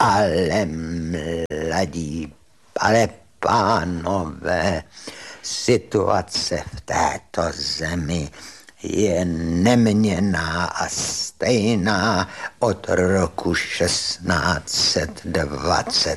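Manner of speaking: voice trembling and shaking throughout. Recalling your art history professor answering someone who complained about the times, in a shaky Professor Štech voice. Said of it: "mluvil takovým roztřeseným hlasem".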